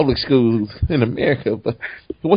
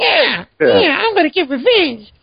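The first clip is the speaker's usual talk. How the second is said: put-on grating, very high little-kid voice. Complaining about a character's grating voice, imitating a little sixth grader. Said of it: "He sounded like a real little sixth grader".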